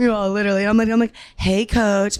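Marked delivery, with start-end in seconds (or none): 1.4-2.2 put-on raspy voice. Retelling a voice memo to a former coach: imitating own raspy voice. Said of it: "My voice is, like, all raspy".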